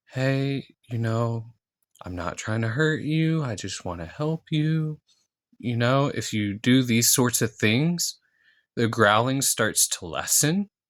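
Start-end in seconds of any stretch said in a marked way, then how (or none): 0.1-5.0 soft, quiet, soft-spoken voice. Showing how to speak to a growling injured dog, softer voice. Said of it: "if you speak in a softer voice".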